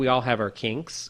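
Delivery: muttered under-breath remark. Retelling a remark made to a woman, muttered under breath. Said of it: "And I under my breath".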